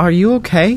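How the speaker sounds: anxious, unsure, nervous, high little voice. Sammy, hidden behind a chest, asks Barry in the corner: nervous question. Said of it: "Sammy asks nervously".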